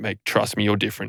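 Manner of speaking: put-on drunk-sounding, earnest voice. Retelling own past words to a twelve-year-old: imitating own past drunk words. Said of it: "I remember clearly looking him in the eyes and going".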